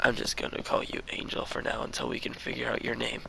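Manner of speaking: usual speaking voice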